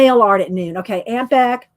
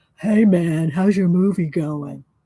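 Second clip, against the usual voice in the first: low, channel-announcer-style voice; 4 semitones lower than usual. Imitating Christopher announcing a channel, asking if it sounds like him: imitating Christopher. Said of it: "does that sound like you".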